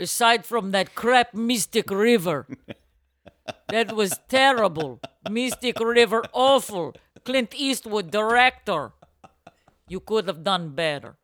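very slow, fake Ukrainian accent. Improvising as a Ukrainian grandmother talking to Sean Penn: put-on Ukrainian accent. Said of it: "Is that a better accent".

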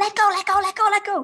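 shrill, very high shouting, over and over. Retelling shouting at someone holding a horse's rein: retelling own shout. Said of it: "And I'm shouting".

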